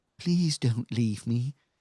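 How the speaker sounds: loud talking horse voice, in character. Voicing a horse that speaks telepathically: talking horse voice. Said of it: "Telepathically, the horse says".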